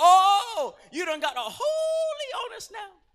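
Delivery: play-acted slow, very high, drawn-out sing-song mocking taunt. Retelling how coworkers taunted him after he got saved: imitating mockers. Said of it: "They're trying to mock me".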